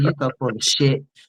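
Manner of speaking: soft, hushed whispered jab, said close to the ear. Retelling going up to someone and speaking into their ear: retelling a whisper. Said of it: "That's what I whispered in his ear".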